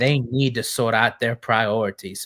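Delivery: bad, fumbling put-on British accent. Quoting a line in the words of Ron Weasley, bad Ron Weasley impression. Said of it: "That was a horrible accent".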